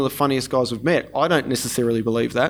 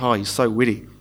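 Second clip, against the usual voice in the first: put-on dry, expressionless deadpan in a flat, level tone; 2 semitones lower than usual. Retelling how she replied to his sarcastic remark: mock deadpan response. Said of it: "she deadpanned the response".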